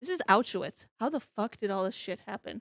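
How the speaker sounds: ordinary delivery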